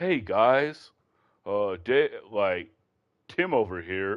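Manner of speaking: slow, stretched-out delivery.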